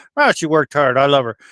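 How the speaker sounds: ordinary delivery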